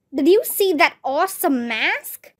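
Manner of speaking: plain reading voice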